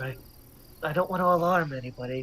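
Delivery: conspiratorial, hushed, secretive half-whisper. A character sits down next to another character and speaks to him, half-whispering. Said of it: "Why are we whispering?".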